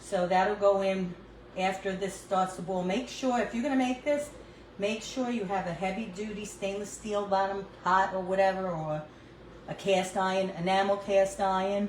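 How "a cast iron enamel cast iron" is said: "iron" with dropped r, New York accent. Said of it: "That's my New York accent".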